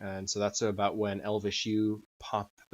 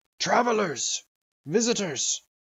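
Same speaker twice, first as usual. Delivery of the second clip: shrill, very high, loud called-out shout; 11 semitones higher, 7 dB louder than usual. Voicing a dragonborn who runs toward the tower: shouting in character. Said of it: "he shouts out in Draconic".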